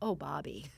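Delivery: mild, gentle put-on voice. Retelling how a person reacted while watching a clip, in a gentle voice. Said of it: "hear the voice of Bobby going".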